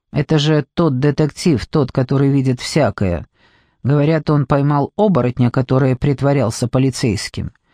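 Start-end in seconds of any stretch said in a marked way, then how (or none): none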